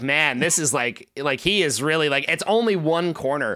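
normal talking voice

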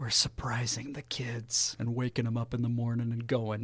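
quiet, hushed voice. Sharing a surprise trip the kids might overhear: saying it quietly. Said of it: "I gotta say this quietly".

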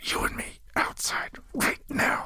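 seething, angry, hushed whisper. Tez whirls on Melanthorn and speaks to him in an angry whisper. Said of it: "with an angry whisper says".

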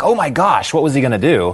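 ordinary delivery

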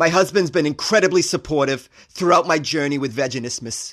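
put-on Long Island accented speech. Repeating the woman's line in the same put-on voice: Long Island accent, like Woody Allen. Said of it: "I know I sound like Woody Allen right now".

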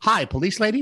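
put-on tiny, small, high-pitched little-kid voice. Retelling a news story about a call to police: imitating a small child's voice. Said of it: "a small little voice started out".

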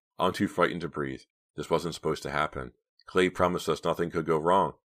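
ordinary delivery

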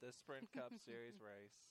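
slow, low, glum downer voice. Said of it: "This is Napoleon Dynamite voice".

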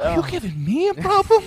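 loud, high-pitched hissy fit. Imagining a hissy fit, Mark Wahlberg hissy-fit impression. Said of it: "having like a hissy fit on Tren in his voice".

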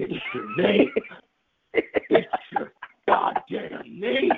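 furious, slow, deliberate, drawn-out angry voice. Acting out a movie hero revealing the secret words: Harrison Ford impression. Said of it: "great Harrison Ford impression".

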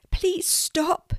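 very high, squeaky, begging plea. Narrator reads Di begging Lucy to stop running: Di's squeaky pleading voice. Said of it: "begged Di".

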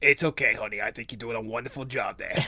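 put-on smoker's voice. Speaker breaks into a bit, reassuring someone called honey: smoker voice. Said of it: "Smoker it, voice".

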